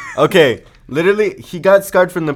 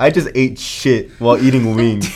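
usual speaking voice

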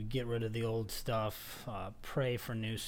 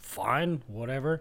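mock-sarcastic tone; 3 semitones higher, 8 dB louder than usual. The speaker retells his sponsor's answer when asked about his progress, imitating sarcasm. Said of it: "he was very sarcastic".

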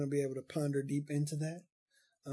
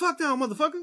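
very high-pitched, loud, hard-cussing outburst; 13 semitones higher, 7 dB louder than usual. Retelling an uncle's reply about his hair: imitating Uncle Greg cussing like Samuel L. Jackson. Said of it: "That's how he talk, like Samuel L. Jackson".

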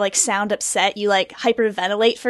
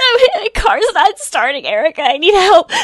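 loud, high fake sobbing with put-on hyperventilating; 8 semitones higher, 6 dB louder than usual. Demonstrating how to sound upset when asking Erica for help, fake crying. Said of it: "makes you sound like you've been crying for hours".

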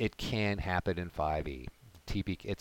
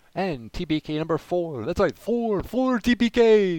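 slow, booming vampire count voice; 11 semitones higher, 10 dB louder than usual. Introducing TBK number four, which involves a vampire, in a vampire count voice. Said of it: "I'm doing the count voice".

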